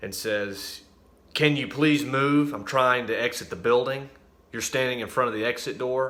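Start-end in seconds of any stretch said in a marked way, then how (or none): 1.3-6.1 loud, rude, hostile voice. Retelling what a woman at the exit door said: imitating a rude, hostile demand. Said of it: "in a very hostile manner".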